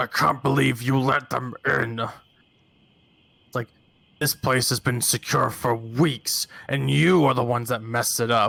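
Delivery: hostile, accusing, aggressive bugbear voice. Narrator voicing a bugbear in a scene, aggressive bugbear voice. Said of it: "the bugbear is uh having a bit of aggression".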